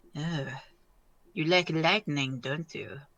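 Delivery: quiet, hushed stage half-whisper. Voicing a player character aiming fingers at a dragon: half-whispering in character. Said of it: "he just whispers".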